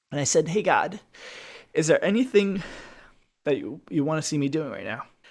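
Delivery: choked-up voice breaking and catching with emotion. Recounting asking God something during a meditation, choked up. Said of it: "I'm getting a little choked up right now".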